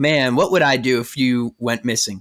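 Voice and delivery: ordinary talk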